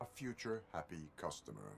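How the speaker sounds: robotic, machine-like voice. Calling a man swamped with laundry, who says it sounds like RoboCop: RoboCop-like robotic voice. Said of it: "You sound like".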